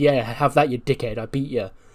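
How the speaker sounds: ordinary delivery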